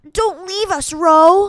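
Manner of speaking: grating, high, loud, annoying cartoon elephant voice. Doing an impression of the annoying elephant from Barbie and the Island Princess. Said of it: "What other Barbie impressions can I?".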